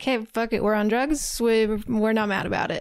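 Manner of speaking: usual speaking voice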